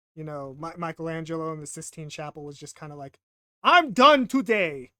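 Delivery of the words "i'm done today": very loud, high, belting put-on Italian accent. Imagining a fed-up artist at the Sistine Chapel, in Michelangelo's Italian accent. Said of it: "that that's my Italian accent".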